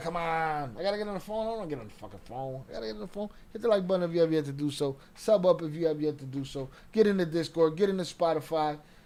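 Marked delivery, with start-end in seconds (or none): 0.0-3.3 grudging, reluctant, unwilling tone. Speaker retelling how a man sounded about the phone, imitating someone sounding reluctant. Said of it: "He sounded like".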